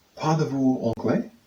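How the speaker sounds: plain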